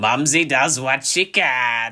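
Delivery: rough, hard-throated, hoarse, high throaty rasp. Voicing Mumsy the cook serving gruel: hard, hoarse throaty voice. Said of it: "She's got really hard, hoarse throat".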